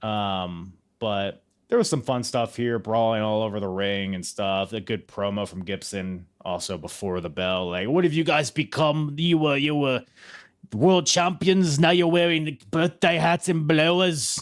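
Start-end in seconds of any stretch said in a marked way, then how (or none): 7.9-14.4 put-on Liverpool accent, higher pitch. Recapping a wrestling match, quoting Gibson's promo before the bell, Gibson Liverpool accent. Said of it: "It's my Liverpool accent".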